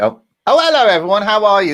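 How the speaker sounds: talking while chewing. A quiz show host greets viewers while talking while munching pizza. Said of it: "I was munching my pizza".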